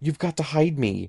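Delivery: crying out breathlessly. The narrator, being chased, pleads with a startled woman holding a baby: crying out breathlessly. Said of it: "I cried breathlessly".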